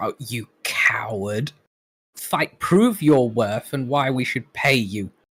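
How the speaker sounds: nails-on-chalkboard screechy, shrieking hag voice. Storyteller voicing a hag heard from another room, shrieking hag voice. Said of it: "shrieking nails on chalkboard voice of a hag".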